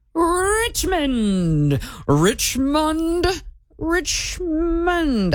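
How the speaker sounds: put-on fancy British accent. Repeating a word while trying to sound fancy, fancy British Monopoly-guy voice. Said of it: "I'm trying to sound fancy".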